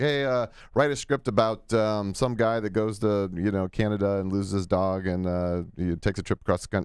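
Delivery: plain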